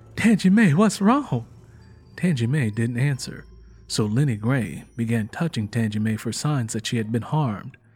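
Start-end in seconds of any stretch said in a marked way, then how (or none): 0.2-1.5 panic-stricken, frantic, high raised voice. Narrator reading a woman's words to someone sobbing uncontrollably, panic-stricken. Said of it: "With a panic-stricken voice".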